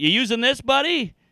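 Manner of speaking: high, half-joking mock teasing with humorous edge. Retelling asking a big guy at the gym about a tiny weight: retelling a joking dig. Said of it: "trying to be somewhat humorous, but also kind of a dig".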